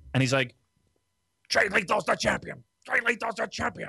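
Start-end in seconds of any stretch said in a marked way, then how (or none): 1.5-3.9 mock very high, worked-up, excited ranting. Retelling a commentator's call on the show: imitating Kevin Kelly's excited rage talk. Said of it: "excited rage talk".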